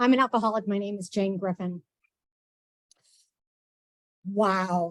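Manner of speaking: nervous, shaking voice. Introducing herself to over a hundred people before speaking, nervous and shaking. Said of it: "I'm shaking".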